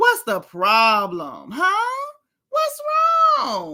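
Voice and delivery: high, swooping, drawn-out put-on voice with swinging pitch. Recapping a reality show argument, doing a Robyn impression. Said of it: "that impression has me on ten".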